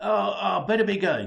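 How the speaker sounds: flustered, alarmed, loud, panicked outburst. Reading a story aloud, a character trying to leave: panicked. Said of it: "he says in a panic".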